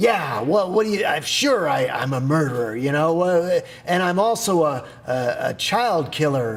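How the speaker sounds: mock sarcastic voice.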